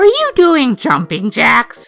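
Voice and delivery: put-on, high, sing-song voice. Telling how his mom asked about his jumping jacks: imitating my mom. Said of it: "That's my impression of my mom".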